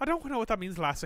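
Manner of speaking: put-on Irish accent. Answering a puzzling remark in a comedy bit, in an Irish accent. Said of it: "so I'll just keep doing my Irish accent".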